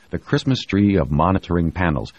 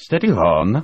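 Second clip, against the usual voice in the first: stiff-upper-lip British manner, restrained and composed; 4 semitones higher than usual. On a plane that has not moved, Tony answers Ilona in British stiff upper lip manner. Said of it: "in his best British stiff upper lip manner".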